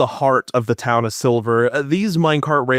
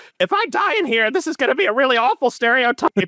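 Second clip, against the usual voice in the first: very high little talking hawk voice; 13 semitones higher than usual. Voicing a player's hawk before it flies ahead: voicing Finn's hawk. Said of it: "hawk looks to you and goes".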